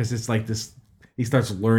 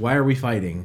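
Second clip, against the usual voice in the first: plain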